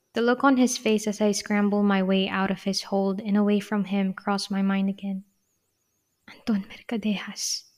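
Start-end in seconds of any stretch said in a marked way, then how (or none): 6.3-7.6 soft, much quieter voice. First-person narrator says a man's name after escaping his hold; softly. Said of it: "I said softly".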